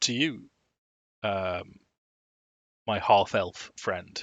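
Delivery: half-elf said with dry, ironic tone. Voicing Rictavio addressing a player's character: ironic tone on half-elf. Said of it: "irony in his voice when he says half-elf".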